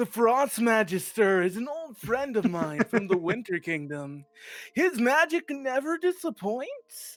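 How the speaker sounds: high-pitched surfer dude way of talking. Trying another read of a character's line: surfer dude voice. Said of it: "try emphasizing that surfer dude".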